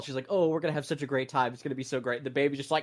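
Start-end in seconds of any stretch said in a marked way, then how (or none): 0.3-2.2 mock calm, unbothered, easygoing tone. Retelling a film scene, the aunt with a screaming baby: imitating the aunt, not minding at all. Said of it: "she doesn't mind at all".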